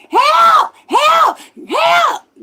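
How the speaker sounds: shrill all-out screams, very high and very loud. Retelling how the police drove past the speaker's car: retelling screaming for help. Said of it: "So I started screaming".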